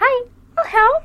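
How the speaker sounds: very high, squeaky, tiny little voice. Voicing the tiniest little carrot offering help to a player: voicing the tiniest little carrot. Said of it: "the tiniest little carrot that you've ever seen comes running up to you and goes".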